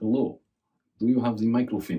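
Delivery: put-on Russian accent in English. Listing the accents one can do: Russian accent. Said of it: "I can do Russian".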